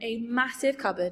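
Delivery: ordinary delivery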